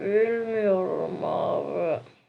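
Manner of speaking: slow, sleepy, drowsy voice.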